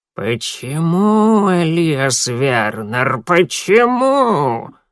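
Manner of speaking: put-on scratchy, creaking old woman's voice, "почему" drawn out. Narrating, voice the old woman gripping a man's wrist, in a creaky voice. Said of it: "скрипучим голосом произнесла она".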